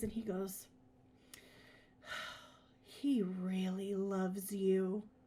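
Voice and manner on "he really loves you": low, slow, soft sighing voice. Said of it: "and he sighs".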